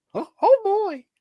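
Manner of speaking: squeaky voice, pitched way up high. Praising someone's Mickey Mouse voice, the speaker joins in with a Mickey Mouse voice. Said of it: "I love your Mickey Mouse voice".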